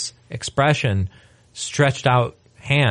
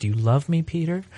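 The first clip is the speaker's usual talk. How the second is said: super cool, calm and totally passive delivery; 4 semitones higher, 4 dB quieter than usual. Retelling a scripture scene, acting out Jesus asking Peter: super cool passive Jesus. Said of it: "Jesus is all totally super cool, passive Jesus guy".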